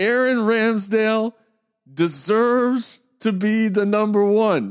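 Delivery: every word stretched out, pitched very high. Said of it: "in his voice".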